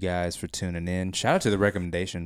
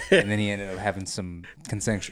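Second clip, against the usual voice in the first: ordinary delivery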